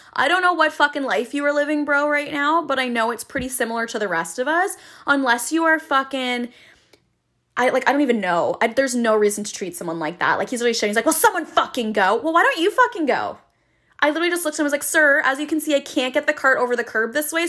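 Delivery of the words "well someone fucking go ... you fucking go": irritated, bossy, angry, mildly yelled. Retelling how an angry man yelled at them; imitating an angry shout. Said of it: "So he's like shouting and screaming".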